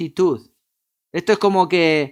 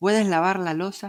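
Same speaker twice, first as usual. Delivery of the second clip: play-acted sugary, honeyed, sweet voice; 5 dB quieter than usual. Speaker retells a woman's request to them; imitating a sweet voice. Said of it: "ella con su voz dulce".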